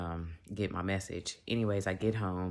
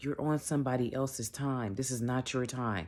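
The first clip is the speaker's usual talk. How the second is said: acted-out yelling, re-enacted; 5 semitones higher than usual. Retelling an argument in the car with him, retelling a yell. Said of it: "why are you yelling?".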